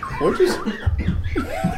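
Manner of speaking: cracking up in a high, squeaky laughing fit.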